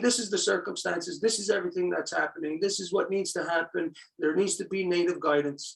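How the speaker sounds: ordinary talk, nothing marked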